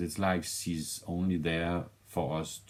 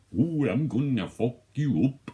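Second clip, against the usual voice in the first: put-on loud, high, caricatured Russian villain accent; 8 semitones higher, 7 dB louder than usual. Imitating an actor's over-the-top Russian accent: imitating a caricatured Russian accent. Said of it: "his Russian accent in it".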